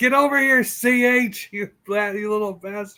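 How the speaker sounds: put-on yelling voice. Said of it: "raise your voice and go Ch".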